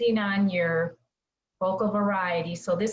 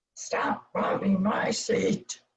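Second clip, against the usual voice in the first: deep, crabby, complaining man's voice. Giving advice on voices, the speaker demonstrates the male voice, deep crabby man's voice. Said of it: "have a deeper voice".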